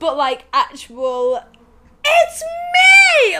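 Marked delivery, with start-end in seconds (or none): 2.0-3.4 very high, very loud burst, me stretched. Recalling the energy of Lucy's line: imitating Lucy's high-energy exclamation. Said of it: "did not match the energy levels".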